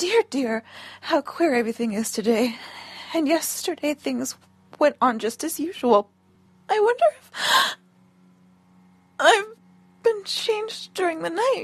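ordinary delivery, nothing marked

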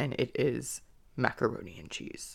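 very low-pitched, deep voice. Answering what their favorite food is, in a low pitch voice. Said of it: "in a low pitch voice".

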